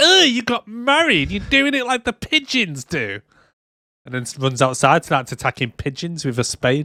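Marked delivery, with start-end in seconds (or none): 0.0-3.2 very high-pitched, disapproving, critical motherly voice. Retelling a story where a mum criticizes her daughter's marriage, imitating the mum's voice. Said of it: "That's a good little impression there".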